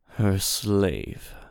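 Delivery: tired, weary, very deep, low voice. Narrator reads the genie answering two others, weary. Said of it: "The genie wearily told Cyrus and Laru".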